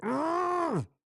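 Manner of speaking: high, loud straining grunting yell.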